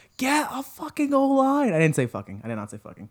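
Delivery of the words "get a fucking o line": imitated scream, higher and louder. Retelling screaming at the TV during the game: imitating a scream. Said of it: "I screamed at the T V".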